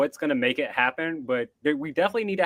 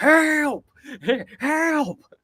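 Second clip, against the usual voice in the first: put-on very high, loud twangy shout, strong country accent; 13 semitones higher, 4 dB louder than usual. Imitating an eight-year-old kid yelling for help, in a strong country accent. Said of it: "with a strong ass country accent".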